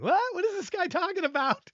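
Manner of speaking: put-on very high, giggling through words. Imagining how someone reacts to the comment, imitating someone laughing while talking. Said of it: "He's probably laughing and going".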